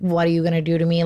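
ordinary delivery

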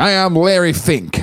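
put-on old radio voice. Joking that a founder sounds like a 1930s actor's manager, old-time radio voice. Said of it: "I do that radio voice a lot".

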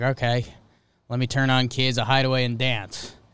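normal talking voice

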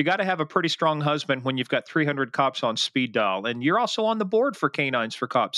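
plain

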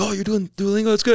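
put-on pleased, approving fatherly tone. Retelling a father's reaction to learning Spanish: imitating a proud dad. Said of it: "my dad was so proud".

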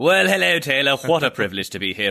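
played-up upper-class voice. A show guest greets host Taylor, in an exaggerated posh voice. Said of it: "he takes off the monocle".

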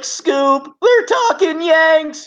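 very high, loud, drawn-out character voice. Asked by another speaker to do a Scooby-Doo impression: Scooby-Doo voice. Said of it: "Scooby-Doo impression".

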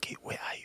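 very quiet, breathy, hushed whisper. Retelling a phone call where the sister answers: imitating sister whispering. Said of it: "she was whispering".

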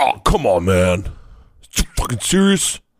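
bold, emboldened, no-longer-timid put-on character voice. Asked how his body part sounds now, the speaker gives a bold put-on voice. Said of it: "My dick now is a little more bold".

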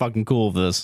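mock indifferent voice. Retelling how the boyfriend answered every check-in: imitating an "I don't care" voice. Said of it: "in an "I don't care" voice".

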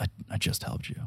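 words said under breath. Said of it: "under Caleb's breath".

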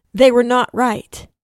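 put-on storytelling narrator voice. Telling the history of the Nazi Party, cutting in with the narrator voice. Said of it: "I'll just come in with the narrator voice again".

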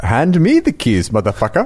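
put-on, sing-song Swedish accent. Asked for the line in a swedish accent, the speaker delivers it: swedish accent. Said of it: "in a Swedish accent".

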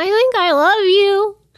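tiny, high-pitched little alien voice. Retelling what a man said with a towel over his face, in a little alien voice. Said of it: "What was that little alien voice?".

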